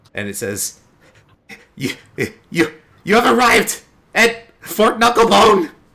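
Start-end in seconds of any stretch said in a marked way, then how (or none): 1.8-5.7 crazed madman voice, very high, very loud, shrill. Voicing a talking map in a player's bag: disembodied voice of a crazed man. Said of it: "the disembodied voice of a crazed man".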